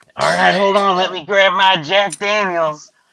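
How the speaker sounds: put-on drunken voice. Acting out a dad taking his kids to the playground: acting drunk. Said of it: "He's, like, hammered".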